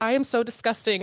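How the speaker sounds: ordinary talk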